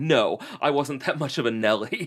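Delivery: offended, indignant, immediate quick reply. Retelling how John Waters answered a question about the phone, mock-indignant John Waters reply. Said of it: "he responded indignantly, immediately".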